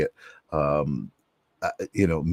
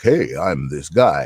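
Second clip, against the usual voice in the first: affected, slow, put-on deep voice; 6 dB louder than usual. Describing the ai voice they chose: imitating a deep voice. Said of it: "I chose this kind of deep voice, like".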